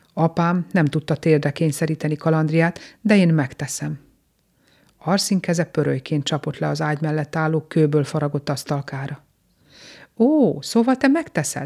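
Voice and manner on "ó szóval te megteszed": scornful, taunting, mocking, pitched-up sneer. Narrator reads Gorgosz answering Arszín's vow, mocking. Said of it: "szólt gúnyosan Gorgosz".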